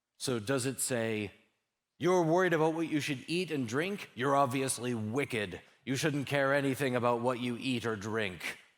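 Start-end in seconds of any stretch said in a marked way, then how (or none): 2.0-8.4 berating, accusing, harsh scolding tone. Speaker demonstrates a wrong reading of the scripture passage, in a scolding tone. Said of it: "when you say it in that tone of voice".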